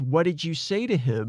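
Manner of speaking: plain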